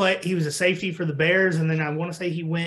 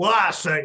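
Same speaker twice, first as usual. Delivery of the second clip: blustery, drawling Southern accent; 3 dB louder than usual. Describing how a game's referee sounded, doing a Foghorn Leghorn voice. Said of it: "Imagine Foghorn Leghorn with a microphone".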